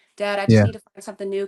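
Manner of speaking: loud, tearful, crying pleading tone. Retelling a call to dad asking for help: imitating own past crying. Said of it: "I called him one day crying".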